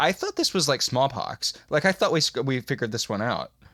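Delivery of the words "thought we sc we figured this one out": normal talking voice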